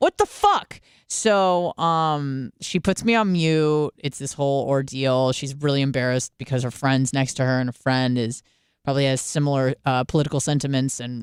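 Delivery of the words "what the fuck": panicked, very high-pitched outburst. Retelling a sister's reaction on FaceTime: imitating a panicked sister. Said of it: "she was just panicked".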